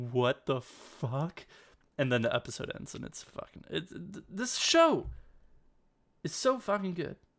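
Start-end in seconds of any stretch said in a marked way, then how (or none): 0.0-1.4 put-on freak-out outburst, much slower. Recapping an episode, the speaker acts out a man's reaction: retelling a freak-out. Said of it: "he just flips out".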